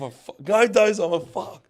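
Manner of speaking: sudden, high, drawn-out excited scream. Recalling watching the footy with Kempy, who suddenly starts screaming; imitating Kempy screaming. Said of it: "he just starts screaming like".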